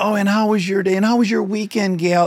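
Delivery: mock, high, overly sweet, condescending tone. Speaker imitates privileged people talking to service workers, in a mock-patronizing overly nice tone. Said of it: "this very patronizing tone".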